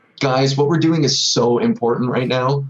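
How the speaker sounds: ordinary talk, nothing marked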